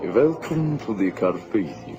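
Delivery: deep, very low vampire accent. Giving a Transylvanian accent when asked: vampire voice. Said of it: "You sound like a vampire".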